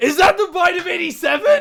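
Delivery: loud very high shout. Joking on the podcast about Five Nights at Freddy's: raised voice, shouting. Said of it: "I gotta ask if I can raise my voice".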